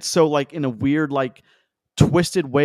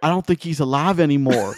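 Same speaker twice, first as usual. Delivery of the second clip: put-on accent of West Virginia. Retelling what a man kneeling in the snow said: imitating a West Virginia accent. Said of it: "such a West Virginia accent".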